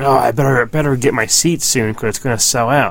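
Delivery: ordinary talk, nothing marked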